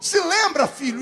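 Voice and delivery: high, calling-out voice. Retelling how a voice shouted a question at him: retelling a voice shouting. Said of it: "a voz gritou de novo".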